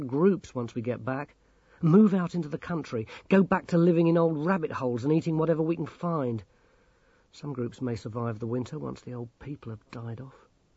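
ordinary delivery, nothing marked

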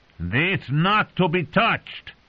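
very high, stretched-out shriek. The goat screams at a man just coming out of pain; screaming. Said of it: "the goat screamed".

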